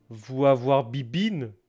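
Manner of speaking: put-on Russian accent. Describing a drunk man who glances over, speaking as him in a Russian accent. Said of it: "Pourquoi j'ai un accent russe?".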